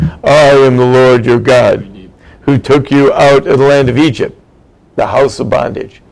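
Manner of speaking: very deep voice, dropped as low as possible. Speaker quoting the Ten Commandments from the Torah, God's very deep voice. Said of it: "here God speaks in a very deep voice".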